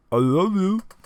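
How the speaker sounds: very loud, high, garbled broken words through full mouth. Voicing a young gentleman rising from his knees: broken speech, mouth full. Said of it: "broken speech, uh, almost as if, uh, his mouth is full".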